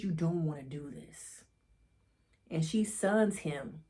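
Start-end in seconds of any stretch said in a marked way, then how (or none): 0.0-1.4 mock firm, serious, stern low voice. Retelling Cross's words to a woman threatening his kids, in Cross's put-on stern voice. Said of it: "In his stern voice".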